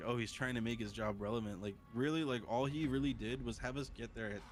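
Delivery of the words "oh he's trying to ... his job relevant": normal talking voice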